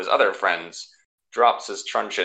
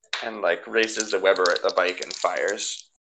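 ordinary delivery

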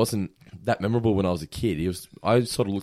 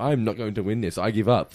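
ordinary talk, nothing marked

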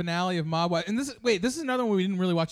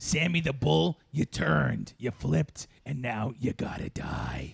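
deep, gravelly put-on voice; 5 semitones lower than usual. Doing a Big Ange impression after the others: Big Ange voice. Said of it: "let's all do our best Big Ange".

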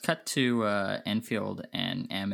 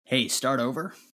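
hostile, pushy, aggressive, confrontational delivery; 4 semitones higher, 4 dB louder than usual. Voicing the cleaner snapping back at an accusing guest: said aggressively. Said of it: "he says that pretty aggressively".

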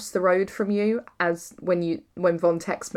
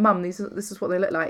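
ordinary delivery

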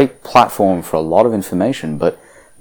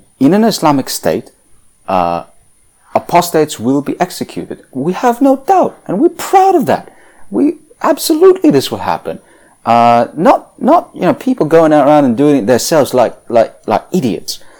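pitched up, with a swinging lilt; 8 semitones higher, 3 dB louder than usual. Reluctantly trying an impression of a quote from a video clip: high-pitched Ali Dawah impression. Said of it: "I'll try a little bit".

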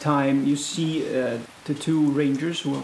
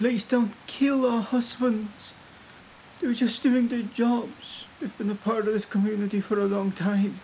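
pleading woman's voice. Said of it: "another woman saying".

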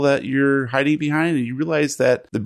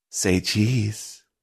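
soft, sultry, seductive stage whisper; 4 semitones lower, 5 dB quieter than usual. Game master voicing Marigold Odorati winking at the three players: seductive stage whisper. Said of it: "winks seductively and stage whispers".

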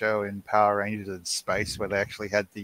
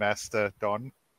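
usual speaking voice

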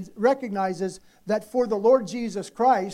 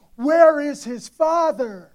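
put-on loud, drawn-out, high yell; 5 semitones higher, 5 dB louder than usual. Retelling standing up in the auditorium at a wrestling match: retelling own yell. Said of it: "I start yelling".

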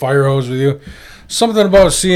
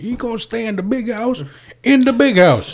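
higher-pitched yell; 9 semitones higher than usual. Retelling a favorite movie scene: imitating Samuel L. Jackson yelling. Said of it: "Samuel Jackson's just yelling at him".

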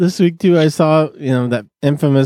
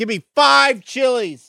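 loud, high, drawn-out voice; 10 semitones higher than usual. Retelling ordering at a restaurant so a man in back hears, retelling a loud order. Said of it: "and I'm all loud".

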